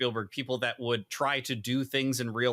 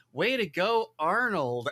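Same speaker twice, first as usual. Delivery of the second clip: put-on pitched-up teen voice in commercial read style; 8 semitones higher, 3 dB louder than usual. Recreating the teen son's line from a commercial, imitating the teen son's line read. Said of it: "that's about as close as I could get to the line read".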